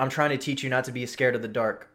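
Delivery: ordinary delivery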